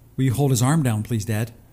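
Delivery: normal talking voice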